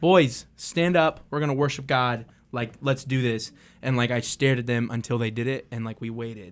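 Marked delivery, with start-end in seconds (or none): 0.0-3.5 raised voice. Retelling telling boys at camp to stand up: retelling a raised voice. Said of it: "I may have raised my voice".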